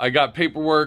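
ordinary talk, nothing marked

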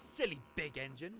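snapped words. The tank engine, left behind by the big engine, snapping. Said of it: "snapped Thomas".

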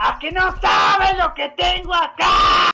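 high, slow, loud teasing taunting shout.

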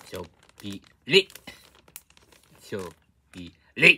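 loud shouting.

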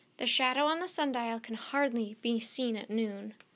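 ordinary delivery

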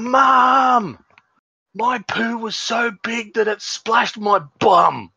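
very high, very slow, drawn-out yell. Retelling a daughter yelling across the house: imitating a daughter yelling. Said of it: "she yells out again".

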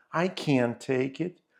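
strong emphasis leaning hard on can't. English lesson in Ukrainian on sentences with can't: stress on can't. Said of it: "Наголос на can".

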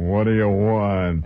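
deep hollow tomb-like voice, word want drawn out. Retelling the reply from behind a banged-on door, Howard's tomb-like voice. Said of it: "he had this voice that came like it was out of an Egyptian tomb".

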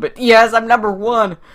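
very loud, high excited cheer, clipping the mic. Celebrating being number one on Agario for the first time, loud enough to clip the mic. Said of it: "Sorry if I'm clipping my microphone".

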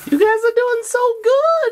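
high, slow, gushing effusive tone.

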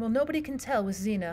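ordinary delivery, nothing marked

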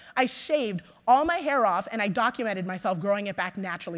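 ordinary talk

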